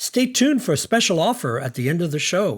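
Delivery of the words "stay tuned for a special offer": usual speaking voice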